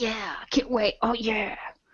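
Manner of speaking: put-on soft, eager, excited little-kid voice. Imitating how excited he sounds about going first: mimicking an excited little kid. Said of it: "Like a little kid".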